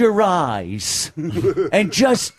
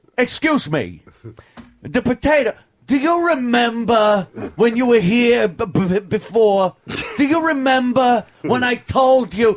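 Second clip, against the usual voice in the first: pushy, kvetching, bullying, griping tone; 4 semitones higher than usual. Retelling a meal where food was brought out, imitating Dice kvetching like a bully.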